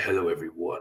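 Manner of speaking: pinched voice from the back of the throat. Showing the voice pinched at the back of the throat: Freddy Krueger voice pinched in throat. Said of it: "So it's like".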